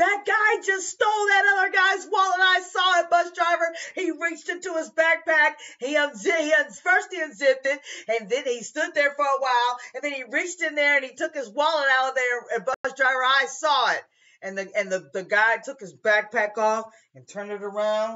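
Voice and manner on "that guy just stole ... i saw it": high, frantic yelling and screaming. Bus driver retelling a woman on the bus yelling at him, imitating someone yelling and screaming. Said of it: "she's yelling and screaming".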